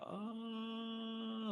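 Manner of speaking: high, soft yell, as if from far away. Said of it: "but just, like, yelling".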